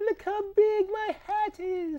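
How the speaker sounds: very high, slow, drawn-out put-on regal voice. Showing a picture of a big hat, in a put-on royal voice. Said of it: "That's my impression of a royalty".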